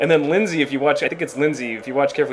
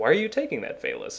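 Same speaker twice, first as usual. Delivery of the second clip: dry, soft, unbothered deadpan; 7 dB quieter than usual. Retelling how an actor delivered his line in the first shot, Baugh's deadpan delivery. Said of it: "he delivered it very deadpan every time".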